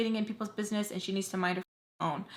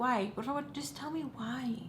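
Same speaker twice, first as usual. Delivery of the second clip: hushed voice, as soft as possible; 4 semitones higher, 7 dB quieter than usual. Retelling a talk with her at bedtime: imitating someone's softest voice. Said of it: "trying to talk in, like, in the softest voice ever".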